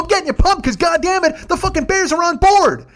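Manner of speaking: very high, loud, excited yelling. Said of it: "we start just fucking yelling".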